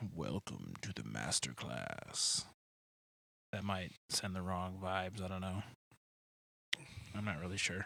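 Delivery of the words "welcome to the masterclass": very low, slow, deep show-opener voice. Showing how the show intro sounds: voice dropped an octave. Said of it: "drop it down an octave or two".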